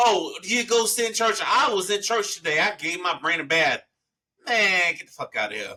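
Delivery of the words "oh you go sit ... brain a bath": boastful, flexing, show-off bragging tone. Imitating people who flex about going to church: imitating someone flexing about church. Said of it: "the people that flex on you about going to church".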